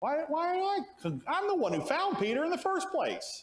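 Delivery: high-pitched, aggrieved, slighted complaining tone.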